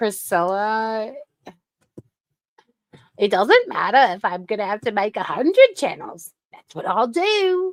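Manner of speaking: bad fake Australian accent, swooping pitch. Quoting a woman's line, admitting the accent is off; bad Australian accent. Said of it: "my Australian accent is off".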